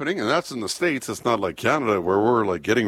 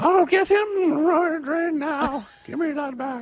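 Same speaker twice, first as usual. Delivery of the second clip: put-on bad old-lady impression, much higher and slower. Co-hosts joking about sending a 90-year-old lady after someone, horrible old lady impression. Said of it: "That's my horrible impression of her".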